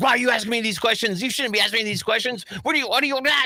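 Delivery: angry, mad, scolding rebuke. Retelling the older sister's reaction to being asked what a jockstrap is, mock-angry scolding. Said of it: "she got all mad".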